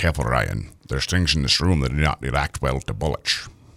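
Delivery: very low, Scottish film-star voice. Asked for your best accent, show a waiting listener your Sean Connery impression. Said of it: "I'm going to do an impersonation of".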